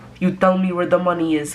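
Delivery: put-on clumsy, unconvincing Russian accent, barely there. Retelling a russian mafia guy questioning a man pinned in a chair, bad russian accent. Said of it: "because that's not a Russian accent".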